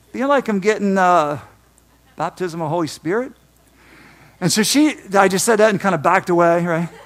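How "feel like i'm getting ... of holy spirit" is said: plain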